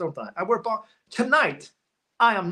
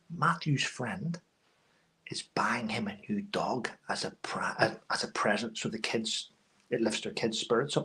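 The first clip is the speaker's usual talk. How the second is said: very low, hushed whisper under the breath; 8 semitones lower, 7 dB quieter than usual. A channel host shares news about matthew with viewers, whispering. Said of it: "I don't know why I'm whispering".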